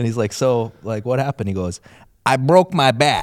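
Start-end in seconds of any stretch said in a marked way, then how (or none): 2.2-3.2 put-on southern twang, much higher, louder, slower. Speaker retells a man's answer to an interviewer: imitating Mike with southern twang. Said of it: "you gave Mike a little southern twang there".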